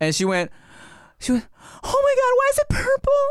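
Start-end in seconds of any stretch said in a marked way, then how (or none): 1.3-3.2 mock panicked girl scream, much higher. Recounting a girl's reaction when he was a teen; imitating a girl screaming. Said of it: "she screamed".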